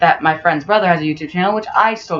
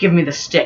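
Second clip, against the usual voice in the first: mock serious delivery. Retelling what a kid said while demanding the stick: imitating a serious demand. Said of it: "all serious".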